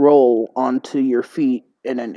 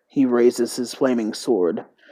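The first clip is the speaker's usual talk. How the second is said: plain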